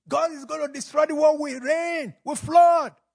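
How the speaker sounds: very high, loud shouted cry.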